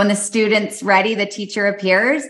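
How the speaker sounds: usual speaking voice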